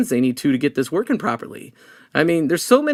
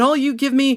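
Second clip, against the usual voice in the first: put-on scream, higher; 9 semitones higher than usual. Retelling a guest blowing up at a dinner q&a: imitating someone screaming. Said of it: "he starts screaming".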